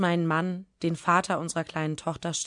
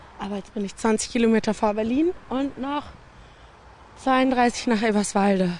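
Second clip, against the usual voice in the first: slightly winded, much higher and louder; 6 semitones higher, 4 dB louder than usual. Reporting progress on a bike tour to eberswalde, a bit out of breath. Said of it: "Ein bisschen außer Atem".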